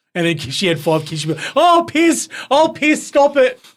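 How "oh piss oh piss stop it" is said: put-on very high, very slow, loud wheezing cry. Imitating someone who wheezes with laughter: imitating someone wheezing with laughter. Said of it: "She'll be up there wheezing".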